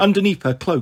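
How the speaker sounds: ordinary delivery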